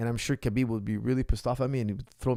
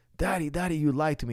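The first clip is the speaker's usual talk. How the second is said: put-on weeping little girl's voice, tearful and crying; 4 semitones higher than usual. Retelling a daughter coming home upset, imitating a crying daughter. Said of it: "And she's crying, crying, crying".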